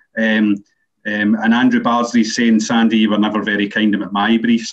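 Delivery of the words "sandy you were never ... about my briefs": normal talking voice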